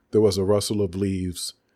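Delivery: ordinary delivery, nothing marked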